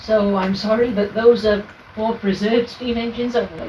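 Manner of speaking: ordinary talk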